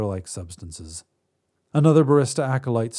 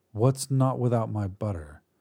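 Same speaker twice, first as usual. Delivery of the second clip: ordinary delivery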